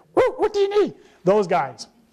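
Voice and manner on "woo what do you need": tiny, very high, put-on squeaky creature voice. Describing small robed Star Wars creatures, put-on creature voice. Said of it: "they sound like this".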